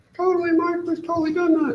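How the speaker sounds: very high, taunting, mocking voice. Speaker answers his own question when nobody responds, mocking voice. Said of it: "I'll answer my own questions in a mocking voice like that".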